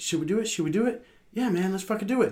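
eager, high-pitched, hushed half-whisper. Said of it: "go over to [name] and kinda whisper".

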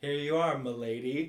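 imitated formal delivery. Retelling a restaurant server's greeting to diners: imitating a formal greeting. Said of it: "Ooh, formal".

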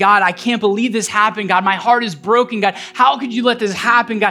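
normal talking voice

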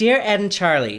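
very loud fake American accent. Reading a letter aloud, trying out a put-on American accent. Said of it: "let me try and do my American accent".

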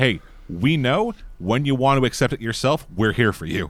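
ordinary delivery

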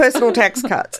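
laughing while speaking.

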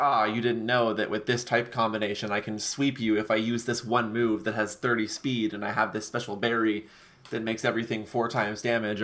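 ordinary delivery

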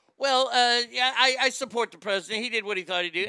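loud, offhand, nonchalant mocking tone.

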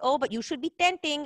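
put-on Filipino accent. Speaker quoting a Filipino businessman he hired: put-on Filipino accent. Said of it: "with my Filipino accent".

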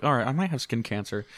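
normal talking voice

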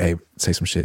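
put-on whisper. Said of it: "Jose whispered to her".

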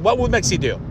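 normal talking voice

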